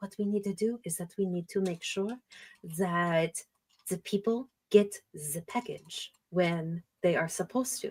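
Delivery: acted-out hushed tone. Recapping a story, voicing one character's reply to another, in a hushed tone. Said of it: "in a more of a hushed tone".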